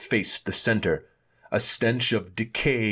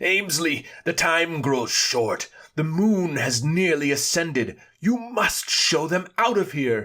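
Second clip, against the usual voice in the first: effortful, heavily strained, pitched-up calling voice; 7 semitones higher than usual. Reading a story aloud, a man calls out to his servant: strained voice. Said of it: "His voice was strained".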